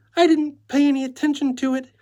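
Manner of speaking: tiny, piercing, shrill voice, very high pitch. Reading a character's reply to a decorator's question: small, shrill voice. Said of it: "she replied in a small, shrill voice".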